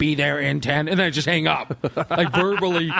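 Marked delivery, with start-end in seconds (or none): 0.0-0.9 put-on, fake robotic computer voice. Showing what gets said when phoning someone: fake robotic computer voice. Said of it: "I do the fake computer voice".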